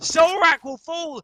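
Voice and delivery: voice breaking and cracking up high. Game caster calls the round live for the audience, voice cracking. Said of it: "a bit of a voice crack there".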